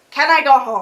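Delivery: ordinary talk, nothing marked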